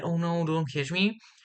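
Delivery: high, frightened, panicky little plea. Retelling her hiding under a bed, imitating a very quiet voice. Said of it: "super quiet".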